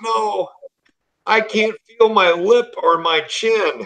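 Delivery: sobbing through the words, very high, drawn out. Retelling what Samantha said in the recovery room: imitating Samantha sobbing. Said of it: "and she's sobbing".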